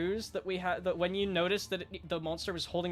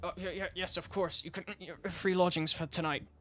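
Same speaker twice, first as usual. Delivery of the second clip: mumbled, stammering, tripping over the words. Voicing the barkeep answering a demand for reward: hurried mumbling barkeep voice. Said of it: "hurried tone mumbles".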